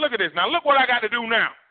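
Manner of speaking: high-pitched, comic, scolding voice. Acting out God speaking to someone at the judgment: Eddie Murphy voice. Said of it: "In almost like an Eddie Murphy voice".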